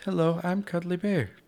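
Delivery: very high-pitched, cuddly cartoon voice. Showing the other speaker your new voice, introducing yourself, in Care Bear voice. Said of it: "This is my new voice".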